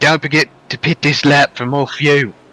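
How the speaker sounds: put-on Australian accent, done convincingly well. A racer retells his pit crew's radio call, in an iRacing pit crew Australian accent. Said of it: "That's a very good Australian accent".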